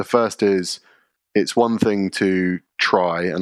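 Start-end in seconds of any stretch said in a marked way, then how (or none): 1.4-3.2 try stressed hard in a slow phrase. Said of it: "I really want to emphasize the word try".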